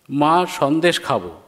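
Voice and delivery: ordinary talk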